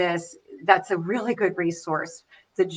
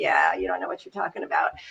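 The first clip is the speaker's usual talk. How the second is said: mock smug, self-satisfied, superior tone; 3 dB quieter than usual. Retelling how a doctor answered a dying father: imitating a smug doctor. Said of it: "the doctor laughs all smug".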